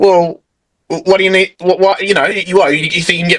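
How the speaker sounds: put-on aggressive man voice. Retelling a man confronting him on the way to the bathroom, imitating an aggressive man. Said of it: "of aggressive asshole".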